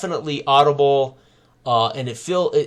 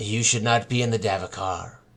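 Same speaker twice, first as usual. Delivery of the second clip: detached, aloof, flat, distant, low monotone; 5 semitones lower, 6 dB quieter than usual. Narrator voicing an unseen voice behind the listener, in an aloof monotone voice. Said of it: "somewhat uh, aloof, monotone voice".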